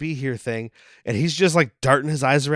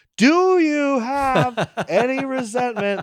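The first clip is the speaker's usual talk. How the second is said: very high, very slow, drawn-out, louder; 10 semitones higher, 3 dB louder than usual. Retelling a robot counselor's question repeated to someone: imitating a robot repeating louder. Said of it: "Let me say it louder".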